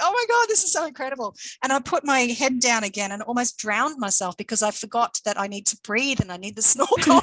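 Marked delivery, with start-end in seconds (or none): 0.0-1.4 put-on thrilled, excited shriek, very high-pitched. Retelling a moment while snorkeling, reenacting an excited scream. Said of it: "I was screaming like".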